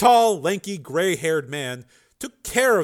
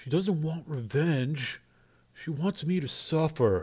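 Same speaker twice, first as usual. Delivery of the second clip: soft, hushed half-whisper; 6 dB quieter than usual. A narrator reads a man speaking to himself, half-whispering. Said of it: "Joe whispered".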